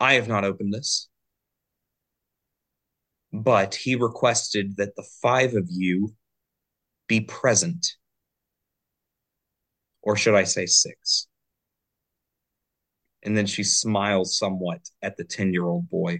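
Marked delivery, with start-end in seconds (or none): 0.0-11.3 calm, gentle and sweet voice. Voicing a widow addressing gathered heirs: calm and sweet tone. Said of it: "she says in a much calmer and sweet tone".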